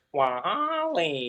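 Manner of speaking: slow, stretched robotic voice. Answering another speaker's impression with their own WALL-E impression. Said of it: "who had the better Wally impression".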